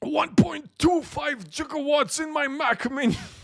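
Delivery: whole line pushed up very high in pitch. Joking about a Mac Mini's power: Doc Brown voice. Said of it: "becomes more Doc Brown".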